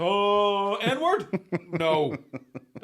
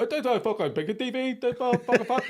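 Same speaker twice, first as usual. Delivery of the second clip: put-on panicked man's voice, much higher, slower; 6 semitones higher than usual. Retelling a man at a bar fumbling his joke, imitating a panicking man. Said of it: "Started panicking".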